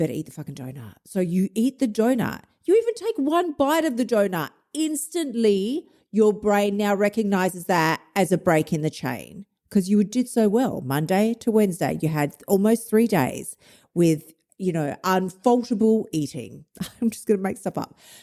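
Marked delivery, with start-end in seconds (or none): 0.0-0.9 low, soft, hushed urging. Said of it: "we're like".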